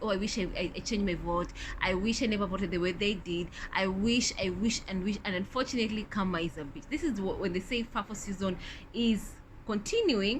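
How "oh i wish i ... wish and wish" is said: usual speaking voice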